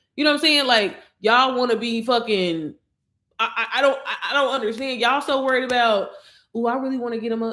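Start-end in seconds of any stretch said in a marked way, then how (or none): 6.6-7.5 mock, put-on whisper. Mocking timid moms who want nice things: imitating someone whispering. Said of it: "he like whispering".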